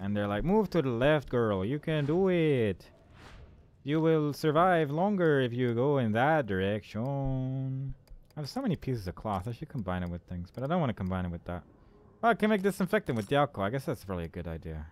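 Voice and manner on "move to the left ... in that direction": fake cowboy accent, higher. Imagining cowboys herding people with lights: put-on cowboy accent. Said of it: "Because that's a cowboy accent".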